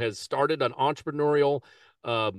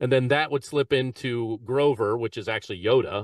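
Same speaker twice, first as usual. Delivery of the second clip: normal talking voice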